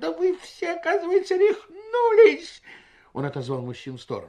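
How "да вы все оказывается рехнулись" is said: very loud, very high, shrill cry of despair. Doctor Shahab Janabeddin answers his laughing guests, exclaiming in despair. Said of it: "с отчаянием воскликнул".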